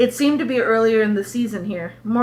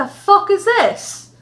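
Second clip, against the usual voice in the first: really bad put-on Australian accent, very high and slow; 10 semitones higher, 3 dB louder than usual. Storyteller acting out an Australian man reacting to a visitor; bad Australian accent. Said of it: "That was a really bad accent".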